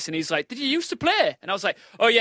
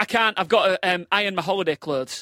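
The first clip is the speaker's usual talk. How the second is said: plain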